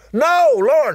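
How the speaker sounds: loud, high-pitched shout.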